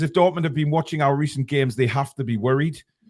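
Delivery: normal talking voice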